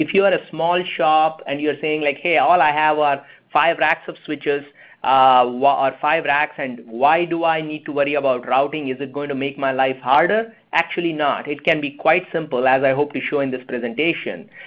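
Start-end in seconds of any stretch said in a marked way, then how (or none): none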